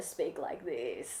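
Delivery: hushed, very quiet, creaky, tired vocal fry. Showing how tired people start to talk: vocal fry. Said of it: "this thing called vocal fry".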